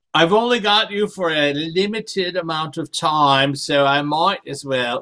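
odd-sounding English accent. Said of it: "sorry for the weird re-, English accent".

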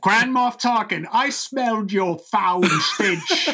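put-on British accent pitched high. Imitating an actress's line from Star Wars with her British accent. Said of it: "she kinda gets a British accent sometimes".

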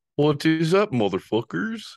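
very high, teasing, put-on voice. Talking with someone, do them to their face: an impression of the person you're talking to. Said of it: "That's my impression of you".

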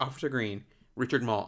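normal talking voice

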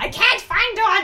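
very high, very loud angry yelling outburst. Reading a story aloud, a toddler character searching: angry voice. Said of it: "said Tommy with anger in his voice".

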